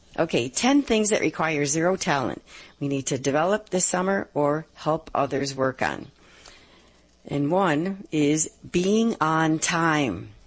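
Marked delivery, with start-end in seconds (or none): 7.3-10.3 slow, deliberate radio host delivery. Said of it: "So I'll say 'em slowly".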